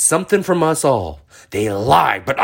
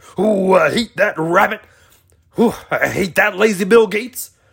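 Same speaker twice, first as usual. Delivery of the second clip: high-pitched cartoon character voice; 5 semitones higher than usual. Noticing you now sound like that Looney Tunes character, Foghorn Leghorn voice. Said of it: "sound like that Looney Tunes character".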